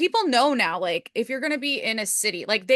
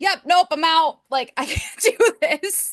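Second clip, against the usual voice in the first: high, loud, fed-up exasperation. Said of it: "And I was like".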